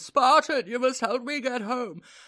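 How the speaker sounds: irritating whine. Quoting a game voice line that pleads for help: annoying whiny voice. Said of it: "it's such an annoying whiny voice as well. I did it pretty much one to one".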